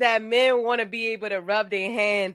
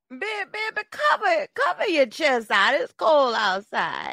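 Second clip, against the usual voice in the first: put-on old lady voice, much higher pitch; 3 semitones higher than usual. Hosts doing their outro in put-on voices: old lady voice.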